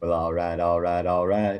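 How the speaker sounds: low movie-star voice, "all rights" drawn and rolled out. Showing the others an impression: Matthew McConaughey impression. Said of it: "you haven't even heard my McConaughey yet".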